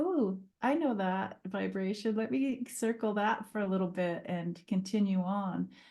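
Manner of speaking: plain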